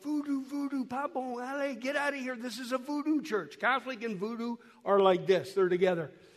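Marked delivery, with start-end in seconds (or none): 0.0-3.6 put-on little kid voice, soft and light. Retelling a little boy running into a church: imitating a kid yelling. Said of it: "comes running in yelling".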